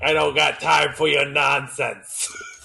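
smoker waitress character voice. Playing the cigarette-smoking grunt waitress, not the cute girl, cigarette-smoking waitress voice. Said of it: "I'm the cigarette smoking grunt waitress".

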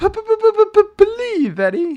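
very high, swoopy, cartoon-style voice. Talking about impressions, trying out a Roger Rabbit impression. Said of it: "I should work on my Roger Rabbit".

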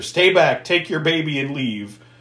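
ordinary talk

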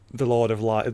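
ordinary talk, nothing marked

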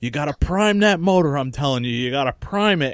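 put-on loud fatherly voice, hollering. Retelling a father telling a brother to prime the motor: imitating father yelling. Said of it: "my father yelling at him".

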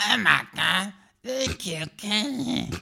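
put-on cartoonish bratty boy voice. Acting out Eric Cartman meeting Mickey Mouse; do an Eric Cartman voice. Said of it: "when Eric Cartman met Mickey Mouse".

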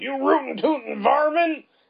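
very high, cartoonish put-on outlaw voice. Describing a cartoonish anime scene as a character climbs from a car: Yosemite Sam voice. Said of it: "you'd think of, like, Yosemite Sam".

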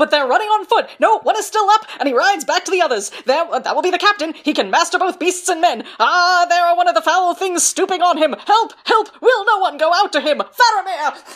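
very loud, high-pitched sports announcer voice. Reading aloud what they wrote, in a Legend of Korra commentator voice. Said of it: "You sound like the commentator".

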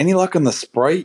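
put-on low-pitched Boston accent. Recalling a favorite scene from a show, quoting the actor's line: Paul Giamatti's Boston accent. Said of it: "in his Boston accent".

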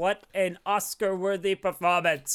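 ordinary talk

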